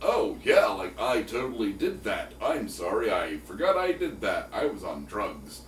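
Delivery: exaggerated California bro accent. Mimicking a man whose accent made you laugh, in a stereotypical california bro accent.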